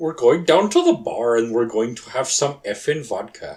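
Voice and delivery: clumsy, bad, fake Dutch accent, loud. After spelling out a vodka name from Holland, bad Dutch accent. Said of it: "That's not one of your best accents".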